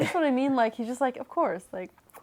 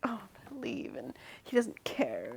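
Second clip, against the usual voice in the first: whispered, upset, acted-out hushed voice; 15 dB quieter than usual. Retelling what she says alone in the room: imitating someone upset. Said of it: "she's all upset".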